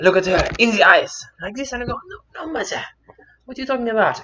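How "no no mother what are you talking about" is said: put-on German accent with raised pitch. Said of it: "I guess I'm going to German today".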